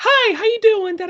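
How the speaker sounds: super hyper, bubbly, very high chirp. Retelling a story character, a girl named Apple: imitating a bubbly hyper girl. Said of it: "she's this very bubbly, very kinda super hyper".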